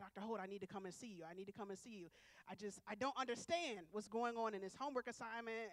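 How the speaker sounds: plain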